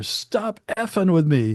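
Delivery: mock yelling. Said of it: "[name] and [name] are screaming at each other".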